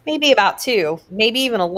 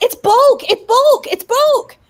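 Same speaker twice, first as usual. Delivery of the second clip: mock yelling, very high, shrill, loud, repeated; 5 dB louder than usual. Retelling how she kept yelling after they took it away, retelling her yelling. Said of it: "she keeps yelling".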